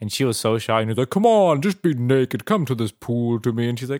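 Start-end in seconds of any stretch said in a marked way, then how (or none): 1.1-3.7 drawn-out, slow speech. Retelling how he urged her into the pool: imitating his voice. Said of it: "That's his voice".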